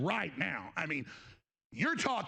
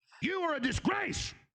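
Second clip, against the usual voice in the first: furious, seething, livid, with raised pitch; 8 semitones higher than usual. Going off at another person, angry. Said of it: "so angry".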